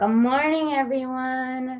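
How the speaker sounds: kindergarten teacher voice. Taking over the session to start yoga, greeting everyone in a kindergarten-teacher voice. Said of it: "I just sounded like a kindergarten teacher".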